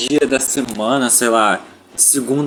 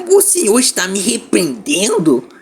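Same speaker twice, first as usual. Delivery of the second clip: high, squeaky, swooping sing-song voice; 6 semitones higher than usual. Showing off a dubbed voice for the group: Kiko voice. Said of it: "eu consigo fazer a voz do Kiko".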